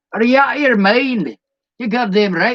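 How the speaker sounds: fake, put-on Southern American accent. Speaker imitating how the slow-talking people speak, in a fake accent. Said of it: "It's fake as fuck now".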